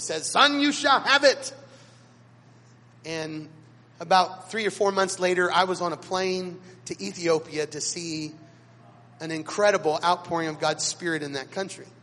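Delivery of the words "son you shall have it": put-on booming, high-pitched bellowing yell. Speaker retelling how a man of faith came up behind him mid-message: retelling a bellowing yell. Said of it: "he yells with that bellowing voice".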